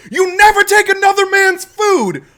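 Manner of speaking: shrill scream, very loud and very high. Retelling a man screaming at someone who grabbed his food, retelling a scream. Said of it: "the dude stands up and screams".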